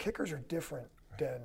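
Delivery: quiet, calm undertone.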